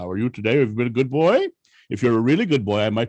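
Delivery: put-on booming voice. Retelling setting a boy on his lap, the speaker uses a booming Santa voice. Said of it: "The whole big booming voice".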